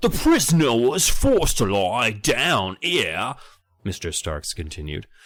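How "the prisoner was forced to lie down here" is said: fake British accent, higher. Reading a tour guide's lines aloud from a story: put-on British accent. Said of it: "as I'm being British".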